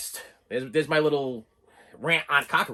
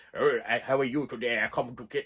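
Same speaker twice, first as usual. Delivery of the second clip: cool, low, soft put-on German accent; 4 semitones lower, 5 dB quieter than usual. Describing a movie's killer who crawls through vents, imitating his german accent. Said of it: "he's got that really cool accent".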